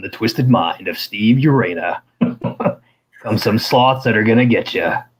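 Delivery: epic, dramatic film trailer announcer delivery. Speaker promising to do the next voiceover himself, good movie trailer voice. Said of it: "put on my my good movie trailer voice".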